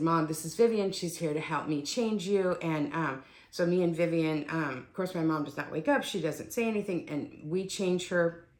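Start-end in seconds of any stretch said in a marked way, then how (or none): none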